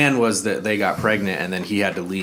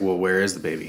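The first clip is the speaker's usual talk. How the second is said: ordinary talk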